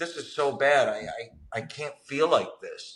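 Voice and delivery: mock crying, tearful, stammering, broken-up distressed words. Retelling feeling alone in isolation and craving a drink: imitating own past crying. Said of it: "and I'm crying".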